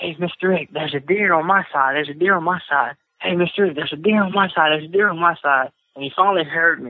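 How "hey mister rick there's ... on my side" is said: imitated whispering. Retelling whispering to a companion, imitating themself whispering. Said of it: "I'm whispering at him".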